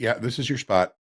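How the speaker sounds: acted completely calm. Speaking as the trade that comes to you, mock-calm voice. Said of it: "It's going to just say very calmly".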